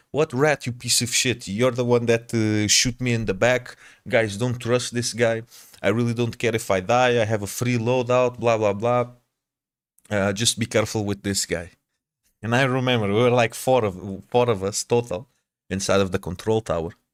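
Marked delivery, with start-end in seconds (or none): none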